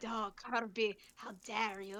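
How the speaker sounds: put-on honed Spanish accent with heavily rolled, trilled R's. Retelling to a friend how a buddy said something in an exaggerated voice, with a spanish accent, rolled r's. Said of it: "roll his R's to really enhance the Spanish accent".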